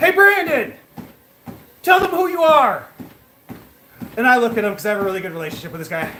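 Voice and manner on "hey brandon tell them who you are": mock high, raised shout. Caseworker recounting his client shouting to him when a store refused a check: retelling a shout. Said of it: "my guy shouts at me".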